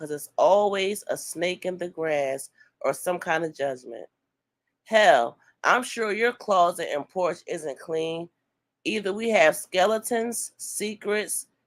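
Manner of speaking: plain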